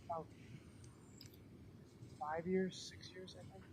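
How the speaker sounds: barely audible, very quiet near-whisper. A man says how long he has lived at his home, very quiet voice. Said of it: "please raise your voice in responding".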